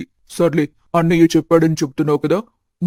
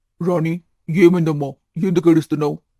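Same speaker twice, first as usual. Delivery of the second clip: ordinary delivery, nothing marked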